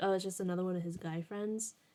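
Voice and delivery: ordinary talk, nothing marked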